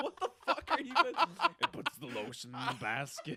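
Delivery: menacing killer voice. Speaking to the others in the group, in a Buffalo Bill voice. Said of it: "Why do I sound like Buffalo Bill?".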